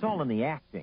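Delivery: ordinary delivery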